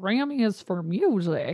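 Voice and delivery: put-on crotchety old-man voice. Retelling how Jeff corrected the speaker, imitating Jeff as crotchety old man. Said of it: "this crotchety old man who's got an accent".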